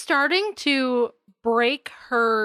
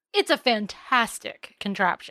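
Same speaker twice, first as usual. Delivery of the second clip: plain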